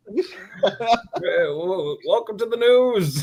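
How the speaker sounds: very slow, every word drawn out, high news-anchor read. Answering a request to do the Newsman's voice: Muppet Newsman voice. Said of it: "Can you do the newsman's voice?".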